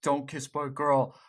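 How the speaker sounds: normal talking voice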